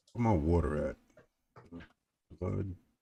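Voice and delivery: street slang delivery.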